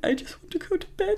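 mock whispered, soft, breathy whimpering. Recalling getting lost at festivals in early twenties, mock whimpering. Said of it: "just kind of whimpering".

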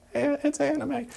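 very high-pitched, small, soft, tiny voice. Recalling a voice from the back of the class, in a small little voice. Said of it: "that little voice, like".

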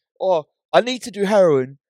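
put-on Manchester accent. Speaker mocking a guy in conversation, doing his weird Manchester accent. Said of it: "in his weird like Manchester accent".

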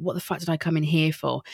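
normal talking voice

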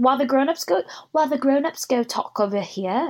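put-on English accent. Retelling what Lisa told the guys: bad English accent as Lisa. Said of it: "we suck at accents".

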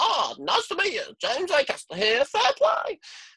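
very high, weird voice with pitch swooping around. Imagining a green alien stepping out to greet people: James Acaster voice. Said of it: "James Acaster is the closest voice we have to what an alien would sound like".

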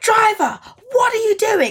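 put-on loud shout. Retelling how a woman on a bus shouted at them, imitating someone shouting. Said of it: "she's like shouting at us".

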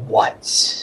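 snarling. Voicing a merfolk leader who turns hostile: snarling. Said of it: "he sort of snarls and he's like".

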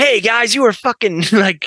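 very high-pitched attempted American accent. After someone remarks on the accent, trying it out: attempted american accent. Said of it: "Let me try and do like".

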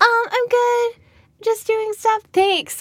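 very high-pitched made-up voice. Host talking for the audience since they can't talk back, in a high-pitched voice. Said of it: "I don't know why I gave you such a high-pitched voice".

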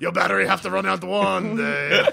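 rough, creaky, raspy ghoul voice. Playing a ghoul taunting a lost traveler: Wario-like ghoul voice. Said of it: "how close the ghoul voice is to a Wario".

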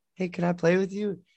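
put-on meek, shy kid voice, high and timid. Retelling a boy asking a girl to play, imitating a shy kid. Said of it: "I see him like real shy".

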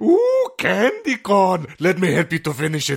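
very high, swooping, drawn-out put-on caterpillar voice. Doing a voice after another speaker asks for it: put-on caterpillar voice. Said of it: "the caterpillar voice?".

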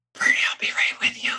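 whispered quietly under the breath. Recounting juggling a pool guy, a UPS guy and a caller; retelling a whisper. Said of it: "So I'm like whispering".

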